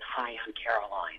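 half-whispering under the breath, hushed stage whisper. Retelling meeting an understudy backstage before places: imitating a half-whisper.

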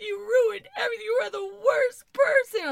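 put-on horrified, inconsolable woman's voice. Retelling a party host's outburst at a late arrival: imitating an inconsolable, horrified woman. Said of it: "she's sitting there inconsolable".

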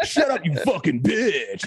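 retro arcade game announcer delivery. Quoting a man talking back to his mom, in a Street Fighter announcer voice. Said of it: "In like an old announcer, game announcer voice".

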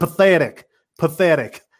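hard, stern Southern delivery. Retelling a coach answering a sideline reporter at halftime, imitating a stern southern voice. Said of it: "in the most southern, stern voice".

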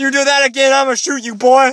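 put-on very high, shrill, loud, grumpy old-man yell. Retelling what happened, the speaker quotes the man who confronted them, imitating an old man. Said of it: "this old man comes out".

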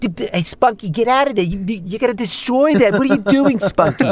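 high-pitched, stammering voice. Retelling an audition after being asked to try Woody Allen: Woody Allen voice. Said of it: "So try Woody Allen".

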